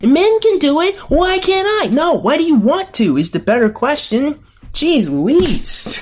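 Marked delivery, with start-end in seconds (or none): 0.0-1.9 whiny, very high voice, held up there. Complaining that others can do it: high-pitched whiny voice. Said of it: "His voice has just gone up and stayed, like, an octave higher".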